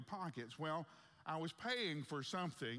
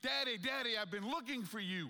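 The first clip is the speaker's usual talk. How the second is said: acted-out loud, high little child's shriek; 8 semitones higher, 6 dB louder than usual. Retelling how a lost son ran toward him: imitating a child screaming. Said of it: "he's screaming".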